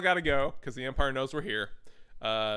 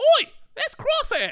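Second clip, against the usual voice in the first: put-on very high, very loud, shrill Cockney-New Zealand mix; 10 dB louder than usual. Retelling a scene as Omega spots Crosshair: put-on Cockney and New Zealand accent. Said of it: "somehow Cockney British and New Zealand at the same time".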